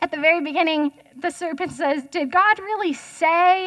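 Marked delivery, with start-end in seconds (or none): 2.9-3.7 heavy stress on the word "say". Quoting the serpent at the start of chapter 3 to listeners: stress on 'say'. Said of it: "you have to put the emphasis on say".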